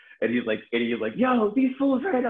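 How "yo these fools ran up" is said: yelling, higher and louder. Retelling how Baez yelled about runners who flew in: imitating Baez yelling.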